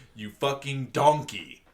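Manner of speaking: put-on high, angry British accent, words spat out. Show how anything the British call you registers as an insult, in Gordon Ramsay's British accent. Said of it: "in the British accent".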